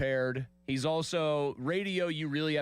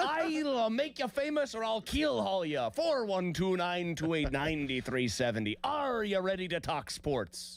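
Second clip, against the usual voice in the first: put-on pirate voice, higher pitch; 6 semitones higher than usual. Imagining the host calming panicking fans: pirate voice. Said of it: "in a pirate voice the entire time".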